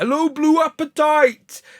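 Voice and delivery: high-pitched mock Wolverhampton accent.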